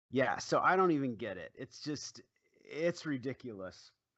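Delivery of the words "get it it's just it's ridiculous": ordinary talk, nothing marked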